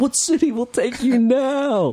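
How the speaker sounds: play-acted shrill, high, drawn-out theatrical screaming. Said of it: "but he was screaming".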